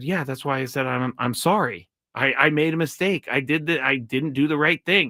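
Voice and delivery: ordinary delivery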